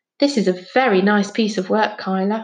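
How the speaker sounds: plain reading voice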